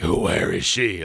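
creepy, eerie superhero voice. Joking about being a creepy caped figure: creepy Batman voice. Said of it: "sexual predator Batman".

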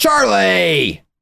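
rough high-pitched growl. Calling out a name as in The Santa Clause: Tim Allen impression. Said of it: "That sounded just like Tim Allen".

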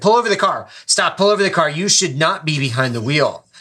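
high, loud, dead serious scolding. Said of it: "He was dead serious".

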